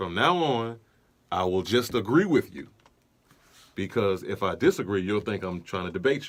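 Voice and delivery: dry, sarcastically agreeable tone. Retelling own reply to mom during a family argument: retelling own sarcastic remark. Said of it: "Sarcastically enough".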